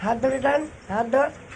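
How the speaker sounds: high, loud coaxing call.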